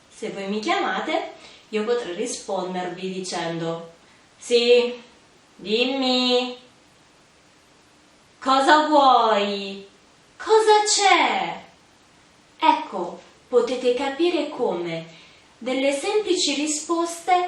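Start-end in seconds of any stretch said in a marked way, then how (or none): 4.3-11.6 loud, curt, annoyed, rude and very slow. Showing how simple replies to being called can turn impolite, rude, annoyed tone. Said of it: "possono trasformarsi in risposte poco cortesi. Volete vedere come?".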